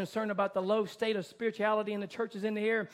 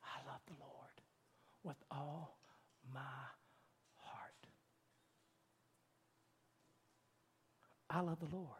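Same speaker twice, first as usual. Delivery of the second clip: hushed, soft, quavering, trembling near-whisper; 6 semitones lower, 19 dB quieter than usual. Speaker retells a young girl rising to her feet: imitating Flory Evans, soft, trembling. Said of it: "She spoke very softly, but in a trembling voice".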